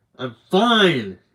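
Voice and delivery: loud, irritated, snapping voice. Reading a drunk man's reply when asked if he's okay, irritated snap. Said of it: "He snaps with an irritated grin".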